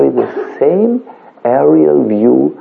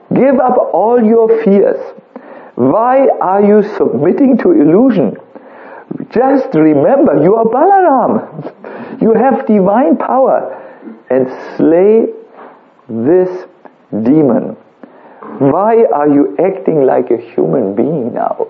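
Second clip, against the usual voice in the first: acted-out very loud, high, thundering, booming voice; 6 semitones higher than usual. Telling a story, voicing Krishna calling out from the bath, thundering Krishna voice. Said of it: "thundering voice, very loudly he says".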